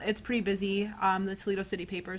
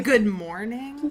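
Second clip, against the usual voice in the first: mock annoying teen tone, higher and louder; 3 semitones higher, 8 dB louder than usual. Imitating how a teen says good morning, in the most annoying way possible. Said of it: "the most annoying way possible".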